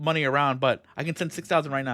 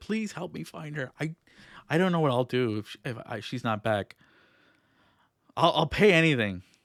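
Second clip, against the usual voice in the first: desperate, pleading, stammering voice. Voicing a husband grabbing hands, begging for help finding her: pleading desperately. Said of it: "He's, like, going to each of you".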